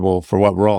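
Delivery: plain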